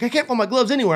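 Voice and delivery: put-on annoyed, aggrieved complaint. Retelling a friend complaining he can't find his gloves: imitating someone mad. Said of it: "he was all mad".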